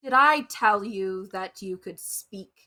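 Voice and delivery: irritated, annoyed, put-out tone. Speaking in character during the game: irritated in-character line. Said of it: "the most irritated look I can give".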